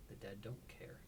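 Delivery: muttered under the breath. Voicing a character after a body is picked up, muttering under her breath. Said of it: "says under her breath".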